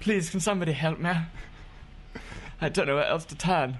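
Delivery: very high-pitched, lightly posh voice. Trying out a voice for a character pleading for help, a bit posh voice. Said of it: "Am I doing it a bit posh?".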